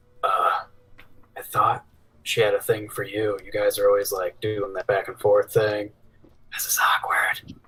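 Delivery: whispering. Player's character leans down off the griffin to whisper to Zash: whispering. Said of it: "I'm gonna kind of whisper to Zash".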